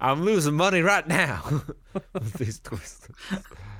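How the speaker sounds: laughing through it, high giggle.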